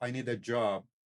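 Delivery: ordinary delivery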